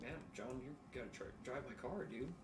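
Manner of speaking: ordinary talk, nothing marked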